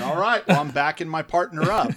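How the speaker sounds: high, loud, defiant delivery.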